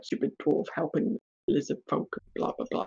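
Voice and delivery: soft, whispered muttering.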